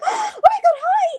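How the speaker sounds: mock very high, very slow, drawn-out squeak. Retelling greeting someone after frowning: retelling a squeaky scream. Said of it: "I start screaming and making the squeaky voice".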